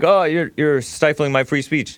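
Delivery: plain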